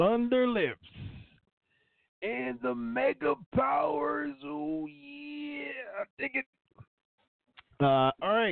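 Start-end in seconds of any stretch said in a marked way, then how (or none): 0.0-6.5 very high, strained wrestler voice, "yeah" stretched out. Introducing a headline, the speaker slips into a Randy Savage impression. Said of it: "Can't talk like Savage for too long".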